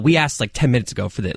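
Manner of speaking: ordinary delivery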